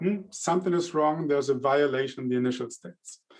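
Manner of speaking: ordinary delivery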